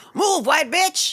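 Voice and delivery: play-acted, sudden, very high-pitched screamed line. Retelling a line a lady in an episode shouts: imitating a scream. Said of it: "busts by and screams".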